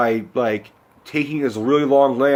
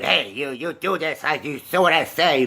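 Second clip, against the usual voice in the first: raspy, angry and short; 3 semitones higher than usual. Describing a movie's mother character, the speaker imitates her: raspy Mama Fratelli voice.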